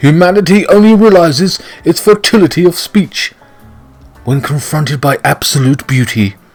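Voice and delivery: put-on posh, aristocratic upper-class English accent, royal style. Showing how really posh people talk, in a posh voice. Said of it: "There you are now, speaking like that".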